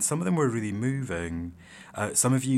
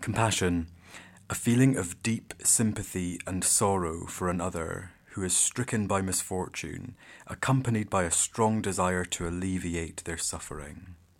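grave, solemn, serious dictionary-definition tone; 2 semitones lower than usual. Reading the dictionary's definition of compassion aloud, in a serious voice. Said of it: "I need my serious voice for this".

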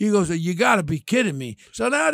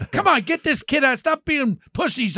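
mock raised, pitched-up yell; 8 semitones higher than usual. Retelling what was said on a call to the guys: retelling a yell. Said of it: "I'm yelling at them".

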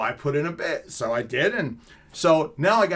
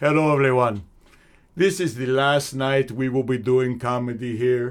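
heavy, exaggerated, cartoonish Iraqi accent; 2 semitones lower, 3 dB louder than usual. Comic retells how the owner introduced him, in a thick, cartoonish accent. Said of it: "with this thick, almost cartoonish accent".

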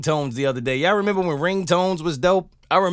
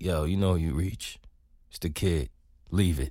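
put-on very low, soft, seductive, sexy voice; 12 semitones lower, 7 dB quieter than usual. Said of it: "I was trying to be sexy".

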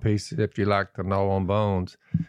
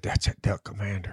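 soft, breathy whisper under the breath; 5 dB quieter than usual. Retelling what a buddy said about him: imitating a whisper. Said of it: "He was whispering".

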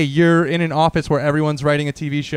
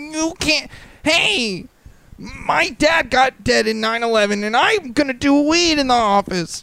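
very high pitch, words drawn out; 11 semitones higher than usual. Imitating a comedian's reaction to being told off: Pete Davidson impression. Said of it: "ten out of ten Pete Davidson impression".

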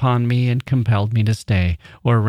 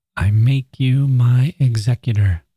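murmured words, slow and drawn out. Miss Grief, awake while Aunt Martha dozes, speaks to the narrator, murmuring. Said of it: "she murmured".

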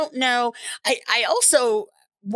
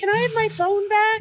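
voice pitched very high; 11 semitones higher than usual. Imitating the listener's daughter replying to her parent: impression of a daughter. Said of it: "So that's my impression of your daughter".

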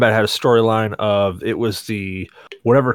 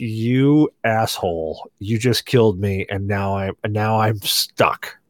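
put-on tone of utter disdain. Retelling how a friend reacted after losing in an arcade game: imitating a friend's utter disdain. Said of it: "with this utter disdain".

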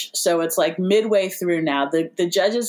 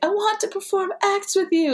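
pitched way up, squeaking; 13 semitones higher than usual. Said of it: "She just keeps saying".

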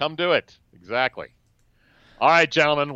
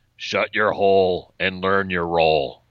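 low-pitched, stern football coach voice. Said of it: "In my best Bill Belichick voice".

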